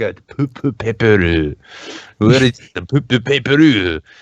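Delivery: put-on Japanese accent. Retelling what he said walking around CVS: common Japanese accent. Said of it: "that very kind of common Japanese accent".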